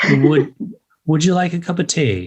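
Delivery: amateur, put-on attempt at an English accent. Prompted by the others after one lesson, a speaker tries an attempted English accent. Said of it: "Your new English accent".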